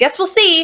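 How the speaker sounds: fuming, angry retort. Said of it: "I'm fuming".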